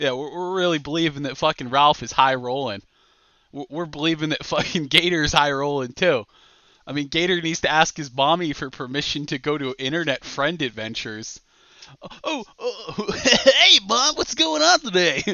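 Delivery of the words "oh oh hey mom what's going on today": goofy, dumb-sounding put-on voice, high and slow. Mocking Gator by acting out how he greets his mom, in a stupid Gator voice. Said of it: "Stop doing that stupid voice".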